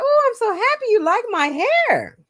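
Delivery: sarcastic fake-happy gush, very high and sing-song. Retelling own past reply to someone: imitating own sarcastic reply. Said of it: "I was sarcastic".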